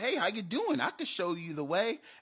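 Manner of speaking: put-on high, funny Southern accent. Voicing a little fairy guy for kids in a dungeon story, funny southern accent. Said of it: "with a funny southern accent".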